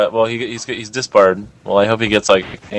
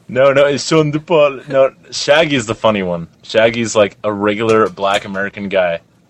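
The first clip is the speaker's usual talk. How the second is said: ordinary talk, nothing marked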